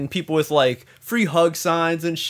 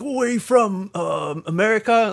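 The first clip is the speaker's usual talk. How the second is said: slow, high, halting, careful broken English; 5 semitones higher than usual. Retelling a man who spoke Japanese to his friend, then tried English: imitating broken English. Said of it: "kind of trying to speak English".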